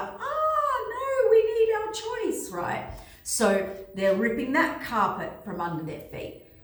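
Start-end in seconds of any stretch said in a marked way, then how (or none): 0.0-2.5 high-pitched wailing protest. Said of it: "all the freedom people are like".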